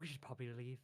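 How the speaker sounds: hushed, soft, quiet stage half-whisper. Game master voices a character half-whispering to the party as he leaves. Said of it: "he kind of whispers to the rest of you".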